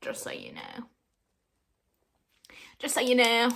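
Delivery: put-on North Carolina accent. Showing off an accent for the audience, north carolina accent. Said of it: "I can pull out my North Carolina accent".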